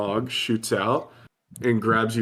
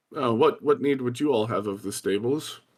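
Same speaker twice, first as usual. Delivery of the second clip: commanding, authoritative put-on frogman leader voice. In an actual play game, the frogman leader answers the players, in a frogman leader voice. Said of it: "A very authoritative-looking frogman. / He says, / he's sort of giving orders out to the rest of the bullywogs in the room".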